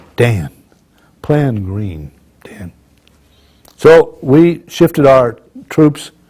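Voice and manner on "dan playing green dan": play-acted low, unruffled, ice-cool calm tone. Speaker recounting a busy battle quotes a man who stayed calm, imitating a cool, calm voice. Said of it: "this man is as cool as an ice cube".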